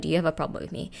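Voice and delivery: put-on calm composure. The speaker recalls stopping a dude to confront him, retelling a very calm tone. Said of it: "In a very calm down tone".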